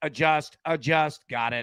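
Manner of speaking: slow, machine-like robot voice. Describing a baseball hitter to listeners, robot voice. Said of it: "he's like a robot".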